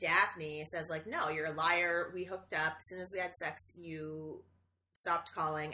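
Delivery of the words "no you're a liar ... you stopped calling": plain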